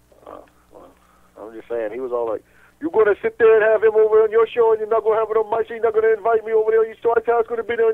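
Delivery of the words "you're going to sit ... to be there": put-on Bosnian-accented speech. Retelling a wrestler's parking-lot rant: imitating Spiral's Bosnian accent. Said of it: "whatever the hell accent that was".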